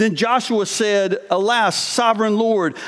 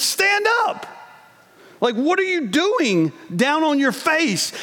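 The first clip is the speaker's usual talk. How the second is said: firm, stern, commanding tone; 6 semitones higher than usual. Retelling what the Lord says in this moment: acting out a stern tone. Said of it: "kind of this stern tone from the Lord".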